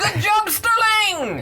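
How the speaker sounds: very high, loud yell.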